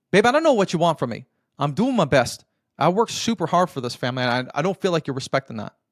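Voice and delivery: quite defensive, justifying pushback tone. Acting out the old response when she says she feels distant: defensive. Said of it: "this old response usually sounds quite defensive".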